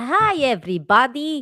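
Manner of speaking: stronger accent, sounding somewhat Russian. Showing how the cartoon doctor's greeting needs more accent: Doctor Nick with more accent. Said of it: "you needed more accent".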